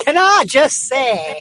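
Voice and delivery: put-on Manchester accent with full twang. Quoting a favourite catchphrase: Mancunian accent. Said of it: "most fabulous Mancunian twang".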